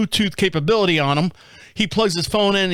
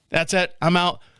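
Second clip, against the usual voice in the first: ordinary talk, nothing marked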